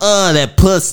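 poor put-on West Coast voice. Trying to sound like a West Coast sounding performer: bad Wesley Pipes impression. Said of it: "I can't even do it".

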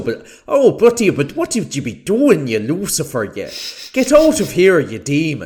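put-on Irish accent. Acting out a priest casting out Lucifer, really fake Irish accent. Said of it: "I put on a really fake Irish accent".

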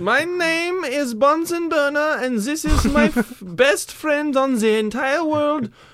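fake German accent, pitched very high. Introducing a made-up character and his best friend: put-on german accent. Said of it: "I want to keep doing the German accent".

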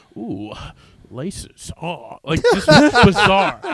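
weird, silly, high-pitched voice swooping up slowly. Describing a show about sneakers, the speaker does Jeff Gold's weird voice. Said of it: "he makes all these weird voices".

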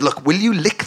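ordinary talk

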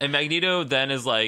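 plain

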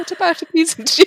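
put-on high, loud, whiny, pleading kid voice, laughing.

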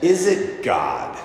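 doubtful, skeptical, sneering tone. Retelling a rich woman's reply to a happy gym worker: imitating her skeptical voice. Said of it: "in that voice".

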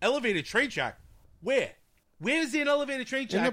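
put-on very high yelling. Retelling how dad reacts to a movie: imitating dad yelling at TV. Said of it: "And he's yelling at the T V".

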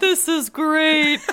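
mock chuckling through laughter, loud and high. Reminiscing with someone, quoting their dad laughing in the kitchen, imitating a laughing dad. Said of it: "your dad sitting in the kitchen laughing".

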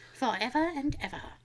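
soft, creepy doll voice, fading away.

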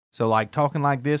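put-on American Southern drawl. Explaining that old English sounded like Southern Americans, demonstrating a Southern drawl. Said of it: "with that Southern drawl".

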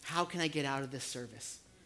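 barely audible, very quiet half-whisper. Voicing the enemy tempting listeners to leave the service: half-whispering. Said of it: "the enemy wants to whisper in your ear".

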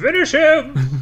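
shrill, very high, bleating goat voice. Taking a turn in the game, the player screams this in a goat voice. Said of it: "in my goat voice".

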